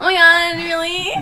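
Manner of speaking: loud, very high, put-on Valley Girl accent. Podcast hosts talk about 80s slang, demonstrating a valley girl accent. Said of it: "Like this?".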